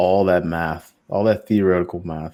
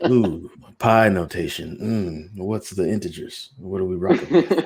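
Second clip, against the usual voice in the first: exaggerated, put-on creepy moan through the words. Showing how one sounds while making algorithms, in a creepy moaning voice. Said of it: "That's so creepy to do math in that voice".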